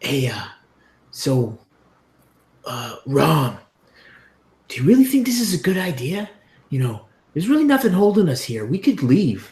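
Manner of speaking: whispering in a character voice. Voicing a character who gets close to rom: whispering in character. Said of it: "kinda get up close to him and kinda whisper to him".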